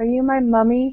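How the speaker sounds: whispering in a put-on voice. Playing a character leaning to Ashford's ear: whispering in character. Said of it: "just whispers".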